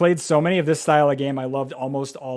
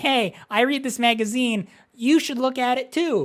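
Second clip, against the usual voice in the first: put-on childish little kid voice, higher; 9 semitones higher than usual. Retelling how the other speaker offered a magazine: imitating someone as a little kid. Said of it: "That's what you sounded like when you were a little kid".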